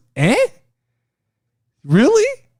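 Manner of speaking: stunned, incredulous, pitch swinging up and down. Recapping what happened, imitating Paul Heyman's shocked reply. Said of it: "who was fucking shocked at the moment".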